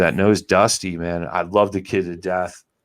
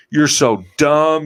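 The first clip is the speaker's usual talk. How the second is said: higher-pitched mock furious screaming yell; 8 semitones higher, 4 dB louder than usual. Retelling his drive home after losing fish: imitating himself screaming. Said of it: "and I'm screaming, and I'm like".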